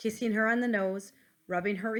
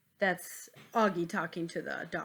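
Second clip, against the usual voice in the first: ordinary delivery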